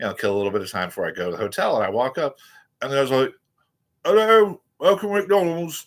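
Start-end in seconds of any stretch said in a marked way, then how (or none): 4.0-5.8 put-on very high, loud Australian-sounding accent. Retelling a McDonald's greeting heard in England, in an Aussie-sounding accent. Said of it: "just spoke exactly like Aussie".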